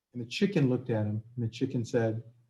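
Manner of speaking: ordinary delivery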